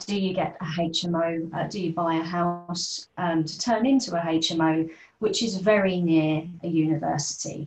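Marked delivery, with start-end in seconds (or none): 5.6-6.5 strong stress on the words "very near". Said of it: "I emphasize the words".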